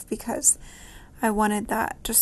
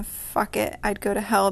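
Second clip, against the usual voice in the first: plain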